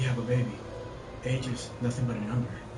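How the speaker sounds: all dramatic, low and soft.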